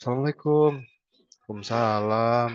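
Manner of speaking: put-on sad, subdued, mournful, low-spirited voice. Demonstrating how to greet a sad person by matching their mood on a call. sad subdued voice. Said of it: "sedihin aja suara kita".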